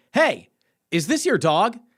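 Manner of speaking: acted high, called-out woman's shout. Retelling how a woman on a porch called down to him, imitating a woman shouting. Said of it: "this woman on like a porch just like shouted down to me".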